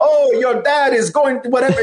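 fake, exaggerated, over-the-top Jamaican accent, very high-pitched. Speaker imitating the crab character talking to Ariel, over-the-top stereotypical Jamaican accent. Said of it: "craziest over the top, you know, stereotypical Jamaican accent".

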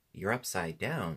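ordinary delivery

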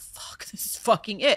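hushed, breathless, panicked whispered freak-out. Retelling the train coming at them while stuck: retelling own freak-out. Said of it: "And I'm freaking out".

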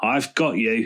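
speaking with a little chuckle. A character speaks after her engine lid falls on a man's head, chuckling. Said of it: "chuckled Belinda".

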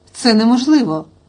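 plain reading voice

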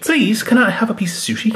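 very high, pleading little begging cat voice. Voicing a kitty card that is begging for sushi: put-on begging cat voice. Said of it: "I think the kitty's begging".

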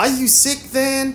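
very high, worried, anxious tone. Marilla finds Anne face down on her bed and asks her, anxious. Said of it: "demanded Marilla anxiously".

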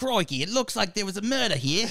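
very high, laid-on, put-on Australian accent. Imitating Mo, the referee, in a put-on Australian accent. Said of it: "I don't even remember if she was Australian".

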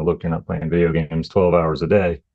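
ordinary delivery

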